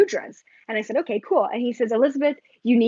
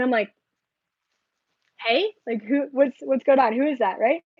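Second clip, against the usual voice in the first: usual speaking voice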